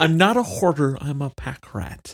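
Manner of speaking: very slow, stretched-out, drawn-out comic delivery. Repeating another speaker's line as an Emo Phillips impression. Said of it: "that's Emo Phillips".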